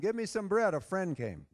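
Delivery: plain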